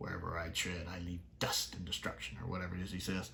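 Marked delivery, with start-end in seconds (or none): 0.0-2.4 hushed, menacing, villain-style whisper. Speaker praising the villain in Pyramids of Mars, quoting him: Sutekh's quiet whisper. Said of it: "just that quiet whisper".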